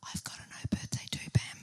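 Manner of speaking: soft, sympathetic, barely voiced whisper. Retelling what people said at pupil free days: imitating someone whispering. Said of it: "and people whisper".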